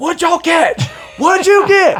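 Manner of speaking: put-on yelling. Retelling how the other guide called out about the catch: imitating someone yelling. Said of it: "yelling at us".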